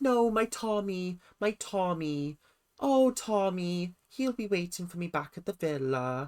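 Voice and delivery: slow, very bad fake Welsh accent. Retelling how Emily answered a guy trying to get to know her, worst Welsh accent. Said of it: "that was the worst Welsh accent".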